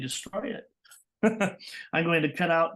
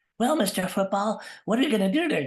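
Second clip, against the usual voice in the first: put-on high, childlike voice like a young kid; 5 semitones higher, 3 dB louder than usual. Speaker replays how he interviewed his toys as a kid, childlike voice. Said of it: "it still sounds like a child".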